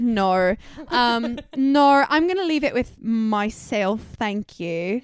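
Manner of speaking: put-on slow, unhurried Australian accent in a woman's voice. Retelling what an Australian woman told a shop owner: imitating an Australian accent. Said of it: "That's a really good accent".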